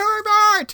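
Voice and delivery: very high, sudden pop-up yell. Retelling how a brother popped up and yelled at a passerby: imitating brother yelling. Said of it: "he jumped up and yelled".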